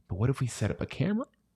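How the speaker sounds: soft, rushed whisper. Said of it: "Why are you whispering".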